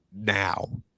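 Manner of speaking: put-on very stern, firm, no-nonsense single word. Retelling his dad's one-word order: imitating a stern voice. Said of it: "He just said in a very stern voice".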